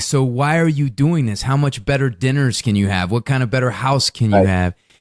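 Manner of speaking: normal talking voice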